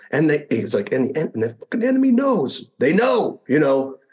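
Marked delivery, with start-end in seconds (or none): 0.9-3.4 put-on very high-pitched, desperate, urgent tone. Retelling a radio call from someone waiting for ammo: imitating an urgent, desperate voice. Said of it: "a lot more urgency in his voice on this time".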